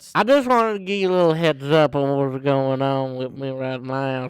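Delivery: speaking without dentures. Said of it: "I don't got my dentures in".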